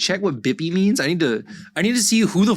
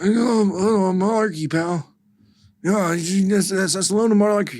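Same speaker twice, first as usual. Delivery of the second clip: put-on old politician voice, pitched higher; 3 semitones higher than usual. Doing an impression of Joe: Joe Biden impression. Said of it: "Yeah, that's him".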